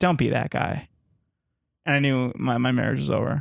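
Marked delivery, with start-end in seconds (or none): none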